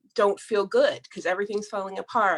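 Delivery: ordinary delivery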